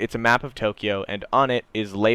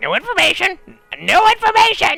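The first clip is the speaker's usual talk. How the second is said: very high, guttural, shrill crow squawk; 7 dB louder than usual. Game master voicing a crow flapping her wings and cawing at the players, guttural crow squawk. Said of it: "you hear her just like gut out like".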